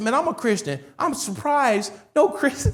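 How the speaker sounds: high, feigned, put-on astonishment. Retelling what was said to him, imitating own fake surprise. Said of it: "like I was surprised".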